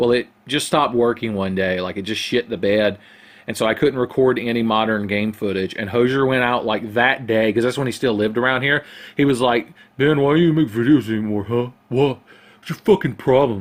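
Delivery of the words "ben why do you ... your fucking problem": teasing, mocking put-on voice. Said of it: "my very flattering impression of [name]".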